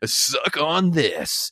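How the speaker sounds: radio announcer delivery.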